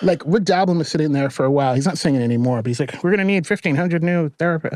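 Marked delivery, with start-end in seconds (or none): 3.0-4.8 put-on soft, gentle, nice-guy man's voice. Imitating Rick Doblin talking about needing new therapists: Rick Doblin voice. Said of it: "that's my Rick Doblin voice".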